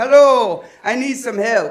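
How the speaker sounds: put-on very thick Jamaican accent. Retelling what a woman said on the phone, in a very thick jamaican accent. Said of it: "speaking in a very thick Jamaican accent".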